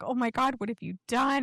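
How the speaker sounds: freaked-out, high-pitched, panicked cry. Retelling a film scene where the mother starts screaming: imitating a screaming mother. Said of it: "she starts, like, screaming and she's like".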